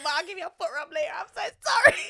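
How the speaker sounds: high, loud, giggling and laughing through words. Playing out an apology scene: laughing while talking. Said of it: "I know I'm laughing".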